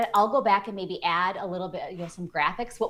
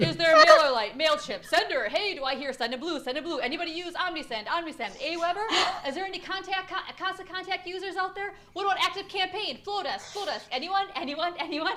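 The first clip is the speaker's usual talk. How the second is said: mock auctioneer voice calling bids, much higher; 10 semitones higher than usual. Speaker tries out a joke auctioneer voice for the audience, auctioneer voice. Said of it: "I'm going to try to get my best auctioneer voice".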